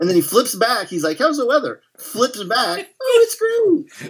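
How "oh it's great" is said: very high-pitched put-on female voice. Retelling a scene where he flips back and answers in her voice: imitating a woman's voice. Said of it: "And like does her voice".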